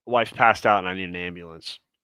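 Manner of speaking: ordinary delivery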